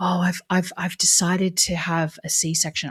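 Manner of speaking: put-on whispering voice. Retelling what a person said in a chat: imitating someone whispering. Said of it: "almost like whispering".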